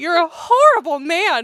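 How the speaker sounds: deliberate, weighted, slow, drawn-out yell. Telling a story about a man at a store, the speaker retells their own yell. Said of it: "I just yelled the words".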